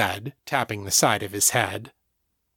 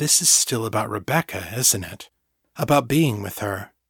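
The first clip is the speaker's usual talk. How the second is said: plain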